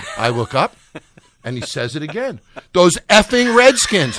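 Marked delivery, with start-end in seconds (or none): 2.7-4.2 shrill, very loud, high-pitched yell at full lung. Retelling the friend shouting it again, louder: retelling a louder shout. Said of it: "The second time he said it louder".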